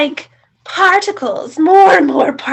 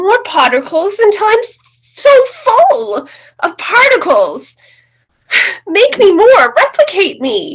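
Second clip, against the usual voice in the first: raised voice, pitched up, pushing hard, demanding; 5 semitones higher, 4 dB louder than usual. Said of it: "Stop talking so loudly".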